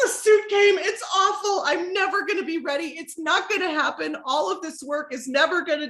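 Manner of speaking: tearful, high-pitched, crying through every word. Retelling crying to a trainer in the weight room: retelling own crying. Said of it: "and I'm crying".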